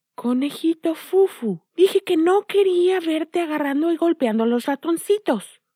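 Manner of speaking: fairy voice. Narrator voicing the bunny's grandmother in her fairy costume, in a fairy voice. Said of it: "dijo con una voz de hada".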